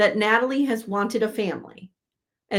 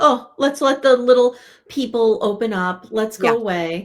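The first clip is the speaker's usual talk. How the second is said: mock, very slow, loud, pointed passive-aggressive tone; 5 dB louder than usual. Imitating a cast member leaving others to talk: imitating a passive-aggressive tone. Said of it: "he's doing the passive aggressive".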